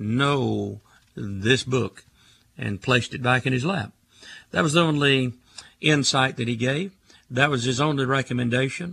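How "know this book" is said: very slow and emphatic, every word heavily stressed. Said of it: "And then the third time he says".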